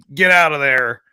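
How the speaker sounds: hoarse, gravelly voice. Imagining a bowling alley sitter with a cigarette: raspy smoker's voice. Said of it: "raspy voice".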